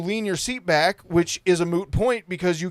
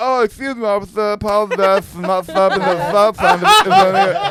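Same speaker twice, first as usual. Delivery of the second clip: put-on garbled mumbling, louder; 2 semitones higher, 7 dB louder than usual. Retelling own words to an officer after a mishap: imitating garbled speech. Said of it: "I can only talk like this".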